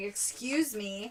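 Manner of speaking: irritated delivery. Retelling a movie scene where she taps a stranger: imitating an annoyed "excuse me". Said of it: "is annoyed that he doesn't hear her".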